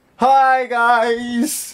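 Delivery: belted high, with the word "guys" stretched out. Mocking how a YouTuber says his intro: Comedy Shorts Gamer intro impression. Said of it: "He's like".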